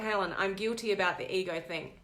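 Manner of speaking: ordinary talk, nothing marked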